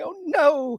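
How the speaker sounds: acted shocked, prudish dismay, high scandalized voice. Mocking offended people who clutch their pearls: imitating scandalized pearl-clutchers. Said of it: "clutching their pearls".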